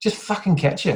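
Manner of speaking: put-on cutting Scouse accent, Liverpool voice. Retelling a shout from half court: Adam Dickinson Scouse accent yell. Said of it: "you just hear a Scouse accent cutting through".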